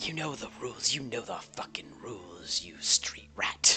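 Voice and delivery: deep, low character voice. Describing a scene to listeners, voicing a man they hear, deep voice. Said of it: "you hear a deep voice just".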